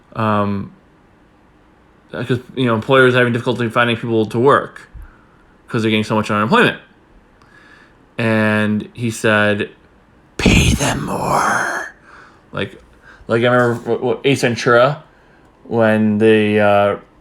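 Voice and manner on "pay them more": really creepy, eerie, unsettling delivery. Retelling what a man answered when asked a question, in a creepy voice. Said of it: "he said in a really creepy voice".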